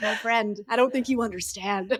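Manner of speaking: intimidating, menacing voice. Retelling a big argument with a partner: retelling own scary voice. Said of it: "I got, like, the scary voice out".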